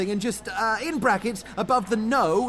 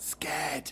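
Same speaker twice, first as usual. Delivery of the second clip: soft whispered voice. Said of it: "I'll just whisper the word scared before that line".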